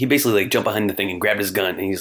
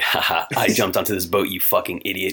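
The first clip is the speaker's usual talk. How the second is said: mock smug villain voice, lower; 4 semitones lower than usual. Retelling how a villain taunts the hero from a boat: imitating a smug villain. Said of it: "so smug".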